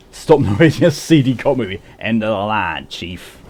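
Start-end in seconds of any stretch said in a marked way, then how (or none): 2.0-3.4 awful, terrible fake American accent. A player in stealth mode mutters a line, in an awful American accent. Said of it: "there you have my awful, awful, awful American accent".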